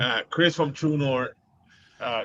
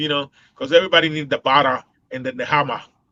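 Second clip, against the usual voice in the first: fast, louder Boston accent. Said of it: "I'm practicing".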